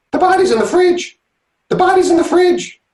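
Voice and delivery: very high-pitched talking parrot voice. With twenty seconds on the clock, doing a parrot taking a bath, parrot impression. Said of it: "this is my impression of a parrot taking a bath".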